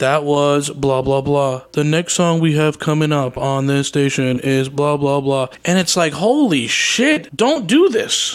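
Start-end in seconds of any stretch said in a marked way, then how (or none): 0.0-5.5 mock-bored, flat monotone radio announcer voice. Complaining about college radio presenters, mocking a bored monotone DJ. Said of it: "I hate the whole monotone thing".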